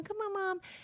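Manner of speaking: put-on very high, soft pleading kid voice. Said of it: "My daughter came up to ask me something".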